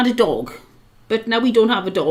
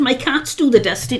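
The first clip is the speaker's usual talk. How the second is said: ordinary delivery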